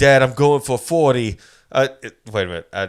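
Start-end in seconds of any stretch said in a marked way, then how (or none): 0.0-1.4 put-on Boston accent, louder. Retelling a story about a grown man showing off to his father, in an attempted Boston accent. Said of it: "That is the accent".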